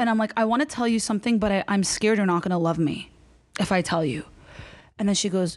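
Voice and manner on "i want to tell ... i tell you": usual speaking voice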